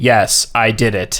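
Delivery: flat, inflectionless, very slow monotone. Mimicking a court transcript read back, flat, no inflection. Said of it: "no inflection".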